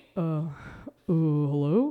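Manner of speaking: very low, dropped put-on character voice. The speaker stops to get into the voice, then speaks in a put-on voice. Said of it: "I have to get the voice".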